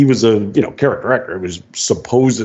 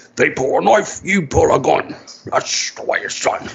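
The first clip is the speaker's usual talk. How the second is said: put-on Scottish accent, pitched higher; 4 semitones higher, 3 dB quieter than usual. Quoting Sean Connery's lines from The Untouchables: Sean Connery impression. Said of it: "you're supposed to be Irish".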